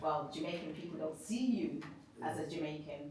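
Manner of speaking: normal talking voice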